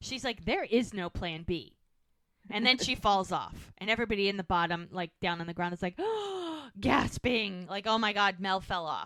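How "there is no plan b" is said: put-on angry tone, slow and firm. Retelling a woman's answer to a man's remark, imitating an angry woman. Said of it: "And she gets pissed".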